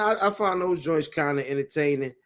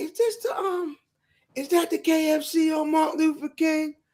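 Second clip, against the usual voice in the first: very high, silly put-on character voice; 11 semitones higher than usual. Describing a Baltimore content creator, the speaker quotes him in a high-pitched voice. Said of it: "he got like a high pitched voice".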